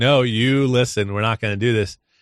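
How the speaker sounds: ordinary delivery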